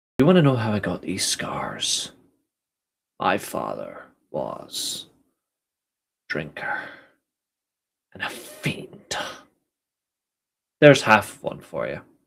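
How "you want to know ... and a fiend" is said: softly breathed, creepy voice. Doing an impression on a wrestling fan show: Dark Knight Joker impression. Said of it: "A Joker Dark Knight impression".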